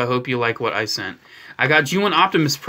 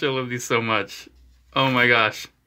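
normal talking voice

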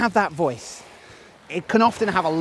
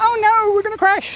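very high-pitched, squeaky cartoon voice; 3 dB louder than usual. Showing what a small voice sounds like: Mickey Mouse voice. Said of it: "Or a Mickey Mouse voice going, ... That's my best Mickey Mouse".

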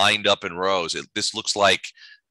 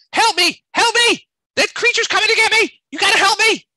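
very high, frantic, loud, shrill screeching creature voice; 8 dB louder than usual. Game master voicing a flying raccoon that flies at the players; screeching panicked creature. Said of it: "it's screeching and flapping".

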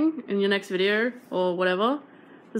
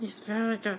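silly, odd, unplaceable put-on cartoon creature voice; 7 dB quieter than usual. Answering how the Kitchen God appraises, in a weird unplaceable voice. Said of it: "I don't know what that voice was".

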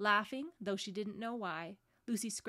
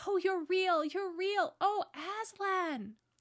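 very high, drawn-out, joyful cry; 10 semitones higher, 6 dB louder than usual. Lucy, greeting Aslan after he licks her forehead, crying out. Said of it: "cried Lucy".

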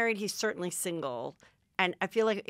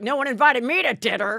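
mock very loud, high, angry, aggrieved, bitter grumble; 5 semitones higher, 9 dB louder than usual. Retelling Matt LeBlanc's complaint about dinner: imitating an angry bitter complaint. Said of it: "He was just, like, so angry and bitter".

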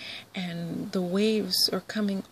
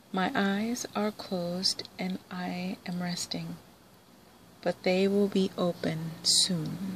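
plain

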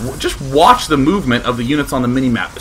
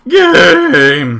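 cracking, breaking voice, higher and louder; 4 semitones higher, 7 dB louder than usual. Finding the 42-minute game, the speaker exclaims with his voice cracking. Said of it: "my disease ends up messing with my voice".

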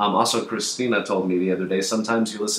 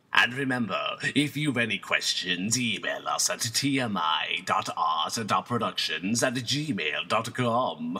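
creepy put-on scary voice; 5 dB quieter than usual. Podcast host signs off the show in a scary voice. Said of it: "I told you not to do that voice. It scares me".

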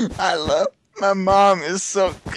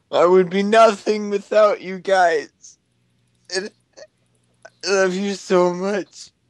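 speaking while crying, tearful. Speaking to a group of friends, crying. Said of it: "I can't stop crying".

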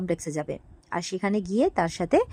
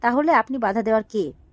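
ordinary talk, nothing marked

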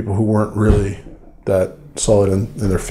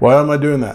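plain

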